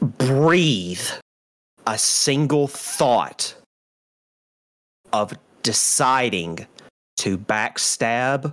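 menacing, wrathful, furious, intimidating tone. A player voices their character threatening Vieris on an intimidation check, intimidating threat. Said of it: "I'm going to be like".

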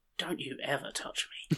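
soft, hissed, menacing whisper.

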